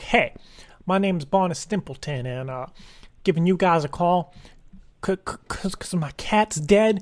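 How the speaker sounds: low, kept-down voice. Demonstrating how to talk on a call to an appliance company, low voice. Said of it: "Kind of keep my voice kind of low".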